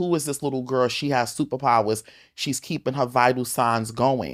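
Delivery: ordinary delivery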